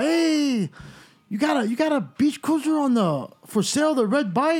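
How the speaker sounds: put-on heavy Spanish-accented English.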